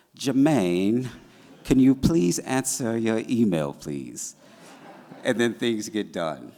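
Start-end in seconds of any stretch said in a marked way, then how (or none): 0.2-4.4 extremely polite, courteous tone. Retelling how she asks Jermaine for something, do a very polite Tati voice. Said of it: "very politely is like, in her very Tati voice".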